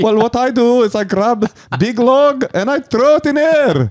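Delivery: high, loud, slow, clumsy bad Finnish accent.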